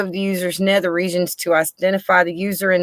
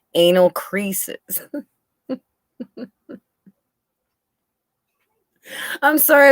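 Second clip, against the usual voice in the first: stifled laughter breaking through the words. Reading out a report's odd phrase aloud, trying not to laugh. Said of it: "I'm trying so hard not to laugh".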